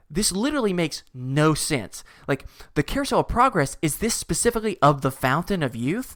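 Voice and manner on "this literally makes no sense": usual speaking voice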